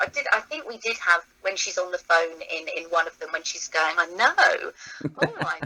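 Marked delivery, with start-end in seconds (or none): 4.0-5.6 strained, throaty laugh from the back of the throat. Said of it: "and as you can hear".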